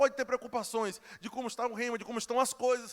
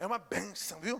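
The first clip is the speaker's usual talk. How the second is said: slow, contemptuous, ironic, sarcastic tone; 5 semitones lower, 6 dB quieter than usual. Showing how calling a woman a blessing can mean she is worthless, sarcastic tone. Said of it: "Está chamando de bênção, mas a tua entonação quer dizer que a mulher não presta".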